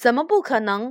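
ordinary delivery, nothing marked

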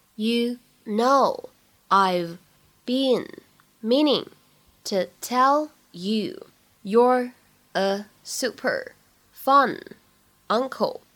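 very slow reading, one word at a time.

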